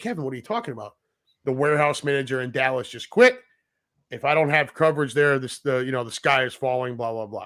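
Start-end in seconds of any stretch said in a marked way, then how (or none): none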